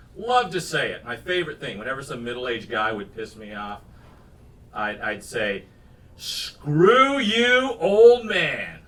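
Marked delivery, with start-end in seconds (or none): 6.2-8.7 very slow, loud, drawn-out, relishing, taunting tone. Recalling the taunt once said to annoying middle-aged men, retelling a leaned-in taunt. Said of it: "Like just really lean into it".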